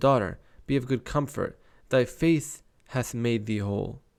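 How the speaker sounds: ordinary delivery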